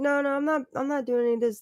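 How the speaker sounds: mocking voice pitched way up, high and whiny.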